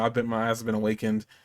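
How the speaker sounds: normal talking voice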